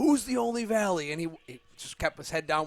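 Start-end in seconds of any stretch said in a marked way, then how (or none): 0.0-1.1 high, top-of-lungs, all-out scream. Retelling screaming at the coach while being the school's Spartan: re-enacting a top-of-lungs scream. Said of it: "screaming at him at the top of my lungs".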